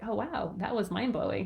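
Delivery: dry, sarcastic, laid-on impressed gush, acted out. Retelling own reply to a son's remark about eating: imitating own sarcastic remark. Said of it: "kinda sarcastically".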